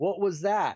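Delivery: mild, mock called-out voice. Retelling how another person yelled up the stairs: imitating someone yelling. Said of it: "yell up the stairs".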